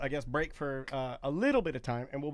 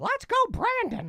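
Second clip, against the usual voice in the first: put-on cartoon mouse voice; 6 dB louder than usual. Telling what people most wanted to say as Mickey Mouse: Mickey Mouse voice. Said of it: "the number one thing that people wanted to say as Mickey Mouse".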